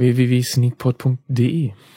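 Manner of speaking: erotic, seductive voice. Reading out the podcast's web address in an erotic, seductive voice. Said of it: "mit so einer erotischen Stimme".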